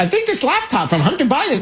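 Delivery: high-pitched mock reporter voice.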